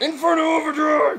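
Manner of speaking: strained, very high, throat-tearing shout. Playing a Pokémon battle, the player calls out a move with a throat-tearing shout. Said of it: "I am tearing up my throat".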